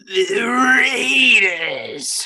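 very high, throat-straining shout. Repeating a team name after the next game is announced: throat-straining yell. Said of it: "that hurt my throat".

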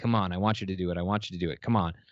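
put-on villain muttering under breath. Quoting a favorite part of a performance: Joker muttering under his breath. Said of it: "just under his breath".

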